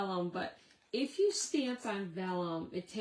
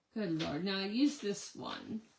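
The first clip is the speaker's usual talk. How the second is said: ordinary talk, nothing marked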